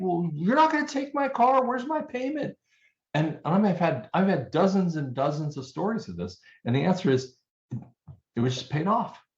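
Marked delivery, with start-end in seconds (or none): 0.0-2.6 very high, shrill, rising screaming. Retelling a borrower calling his bank, imitating a man screaming. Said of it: "He's like screaming at the bank".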